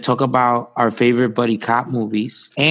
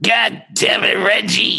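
slow, rough, creaky, dragged-out drawl; 9 semitones higher than usual. Doing a self-described weak Nick Nolte impression for another speaker: Nick Nolte impression. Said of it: "you wanna hear the Nolte impression?".

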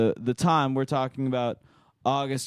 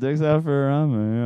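ordinary delivery

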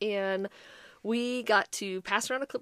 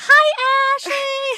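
shrill, very high, very loud, cheery voice; 13 dB louder than usual. Retelling how the mom waved at the door: imitating her mom's cheery greeting. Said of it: "wave at me, like".

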